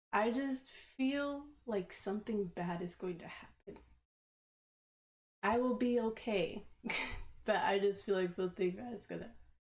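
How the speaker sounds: on the verge of crying. Speaker admits to the listener she's trying not to cry, holding back tears. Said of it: "I'm trying so hard not to cry right now".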